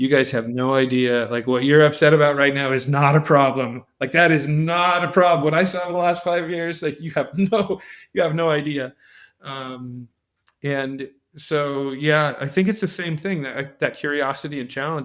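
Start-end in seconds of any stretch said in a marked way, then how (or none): 0.0-8.9 chuckling, laughing through the words. Retelling own reply to people complaining in meetings: retelling own laughing reply. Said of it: "I was just laughing, going".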